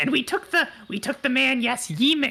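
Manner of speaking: high voice with a slight snarl. The character reports to Yemik with a slight snarl. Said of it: "And he like snarls a little bit".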